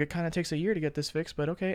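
muttered quietly under the breath. Retelling a physical therapy visit, the speaker quotes a woman retelling a mutter under her breath. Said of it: "under her breath".

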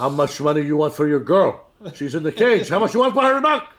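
put-on Mexican accent. Acting out the police captain who always walks through, in a mexican accent. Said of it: "You both are doing flawless Mexican accents".

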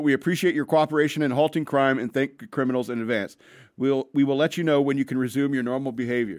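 normal talking voice

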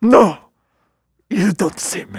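hypnotic, spellbinding tone. Retelling a movie scene to the other speaker, doing an impression of the character. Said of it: "That's a really good impression".

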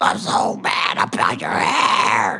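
very slow, dragged-out complaining tone, every word stretched. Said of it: "now you kinda sound like [name]".

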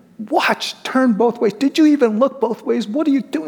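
shrill, furious, very high-pitched yelling. Retelling yelling at children when the ball rolls into the street: retelling own angry yell. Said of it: "I'll just yell at them".

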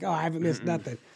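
normal talking voice

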